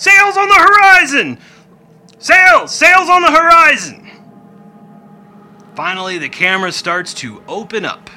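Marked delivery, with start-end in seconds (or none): 0.0-4.1 very loud, very high yelling cry. Narrating a scene, a lookout in the crow's nest yelling. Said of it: "yells out again".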